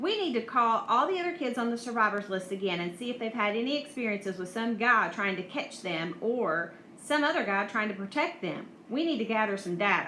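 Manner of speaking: plain reading voice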